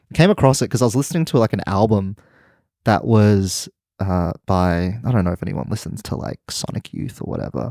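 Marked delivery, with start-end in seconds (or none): 6.5-7.7 lowered, dropped-voice whispered aside. Naming the artist of an album being listened to: lowered voice, whispering. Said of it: "lowered your voice and whispered the name".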